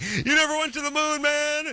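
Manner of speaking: high-pitched, hippie-style yelling. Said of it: "hippie yelling".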